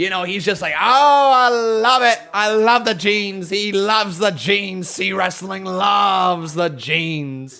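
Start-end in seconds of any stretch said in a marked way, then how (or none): 0.7-3.5 put-on loud English accent, raised voice. Retelling how C Wrestling reacts to Ricochet's jeans, C Wrestling's English accent. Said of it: "In his in his English accent that he has".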